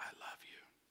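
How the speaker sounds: hushed, very quiet, soft close whisper. Showing how a husband would whisper to his wife: soft whisper. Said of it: "I whispered into her ear softly".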